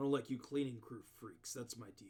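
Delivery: scornful, contemptuous, disdainful tone. Voicing a rival guild member who looks at the player with disdain: speaking with disdain. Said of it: "he looks at you with almost, like, disdain".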